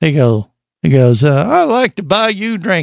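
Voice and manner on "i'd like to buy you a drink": high, flirty come-on tone. Retelling a first meeting at a bar, imitating Jerry. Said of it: "impression of Jerry".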